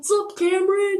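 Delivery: hearty, loud, high-pitched calling out. Retelling a classmate greeting from behind in line: imitating Cindy's deep voice. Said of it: "It was in a deep freaking voice".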